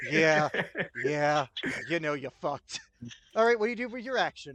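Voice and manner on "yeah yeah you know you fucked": sly, cheeky, grinning delivery. Voicing a grinning werewolf taunting a foe: cheeky werewolf smile. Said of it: "It's the cheekiest werewolf smile".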